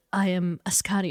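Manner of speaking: ordinary delivery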